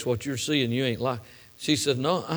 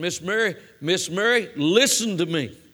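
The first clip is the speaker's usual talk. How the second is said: commanding authoritative tone, higher, much slower; 3 semitones higher than usual. Retelling what the doctor told Miss Mary: retelling a voice of authority. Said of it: "he said it with a voice of authority".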